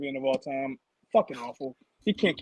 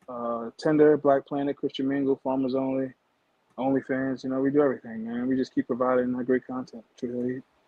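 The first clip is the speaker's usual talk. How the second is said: very calm, somber delivery; 2 semitones lower than usual. Listing where people can follow you online while signing off: very calm. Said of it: "Says it so calmly".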